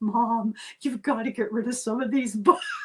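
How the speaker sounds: tremulous, quavering, pleading voice. A mother retelling her tearful kids begging her: imitating a quavering plea. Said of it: "beg me with quavering voice".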